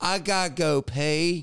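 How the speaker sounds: slow, unhurried put-on southern accent with drawl. Retelling what Peck said before going to pay; imitating Peck's southern accent. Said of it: "he's got this, like, southern accent".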